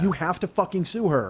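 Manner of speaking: ordinary talk, nothing marked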